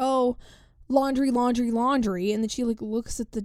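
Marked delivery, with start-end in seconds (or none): 0.0-2.3 put-on yelling, one word repeated over and over. Retelling a woman yelling about laundry at night, retelling a yell. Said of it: "she's like yelling laundry".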